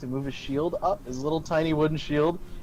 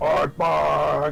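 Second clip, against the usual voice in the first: put-on goblin voice, much deeper; 4 dB louder than usual. Describing a goblin wielding a flail, the speaker voices its cry in a much deeper goblin voice. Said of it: "you just hear in a much deeper tone".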